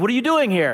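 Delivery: startled, loud, high voice.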